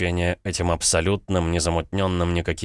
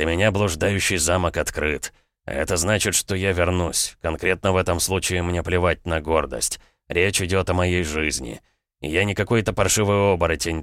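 plain

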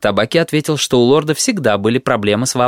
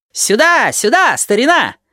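shrill, very high shouting; 12 semitones higher than usual. Tabaki, pretending not to have heard, calls out to someone; shouting. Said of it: "крикнул он, замахав руками".

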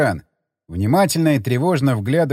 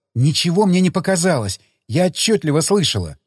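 plain

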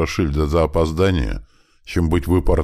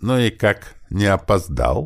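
slow, snide, sarcastic, needling tone; 3 semitones higher than usual. A mother confronts her son about his excuse, snide. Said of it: "ехидно уточнила она".

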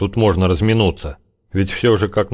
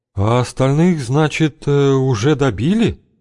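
slow, drawn-out, pitched-up, pointed probing tone; 5 semitones higher than usual. Tsypf asks Zyablik a question, in a lowered voice. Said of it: "Цыпф почему-то понизил голос".

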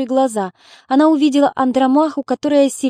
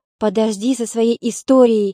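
usual speaking voice

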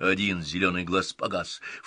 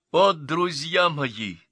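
ecstatic, gushing, loud, high, rapturous exclamation; 8 semitones higher, 6 dB louder than usual. The young count addresses his silent friends, exclaimed rapturously. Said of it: "упоенно воскликнул юный граф".

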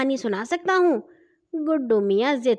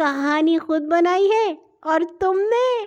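derisive, scoffing, mocking tone, pitched up; 5 semitones higher than usual. An older sister scoffs at a boy who claims he made up a story: mocking tone. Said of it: "باجی نے مذاق اڑانے والے لہجے میں کہا".

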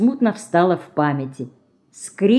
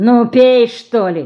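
gruff, impatient, deliberate urging; 4 semitones higher, 4 dB louder than usual. Someone holds a mug of water to a girl who just opened her eyes: impatient, rough voice. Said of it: "нетерпеливо произнес знакомый грубый голос".

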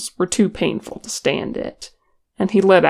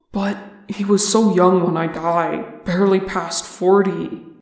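plain

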